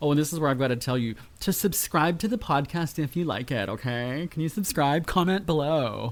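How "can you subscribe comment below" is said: mocking, sending-up tone. Podcast host near the end of the show, in a mocking voice. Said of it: "I do that mocking voice".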